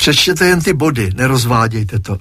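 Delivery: ordinary delivery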